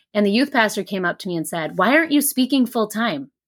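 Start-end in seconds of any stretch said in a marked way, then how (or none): 1.8-3.3 put-on, demanding half-yell. Retelling what the youth pastor asked after the talk: imitating someone yelling. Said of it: "yelling at me".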